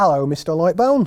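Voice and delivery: put-on broad London Cockney accent. Voicing a character greeting the man standing in the doorway, in a Cockney accent. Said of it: "I've gone Cockney".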